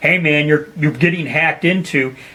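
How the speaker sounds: ordinary delivery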